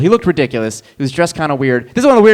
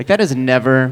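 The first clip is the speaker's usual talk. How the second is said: plain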